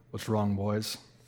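put-on very low, deep, very quiet, soft Southern accent. Retelling what a man said on walking back to them, deep southern voice. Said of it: "in a really like deep southern voice".

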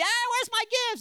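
put-on annoying little kid yelling, very high and shrill. Recalling Christmas videos of being the annoying three-year-old: imitating a yelling kid. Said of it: "I'm yelling and I'm like that kid".

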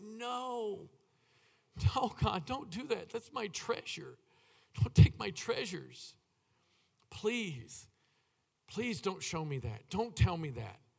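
mock weeping, tearful pleading, long drawn-out "no". Speaker retells begging the Lord not to take their daughter: retelling a weeping plea. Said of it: "I couldn't stop weeping".

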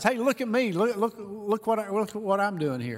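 play-acted high shout. Acting out a person in a mission-trip selfie: imitating someone shouting. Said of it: "he just shouts".

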